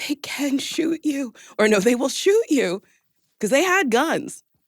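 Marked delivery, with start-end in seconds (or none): 0.0-2.8 tiny, small little voice kept small. Retelling what Tessa said about the cops: imitating Tessa's small voice. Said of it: "Tessa's small voice going".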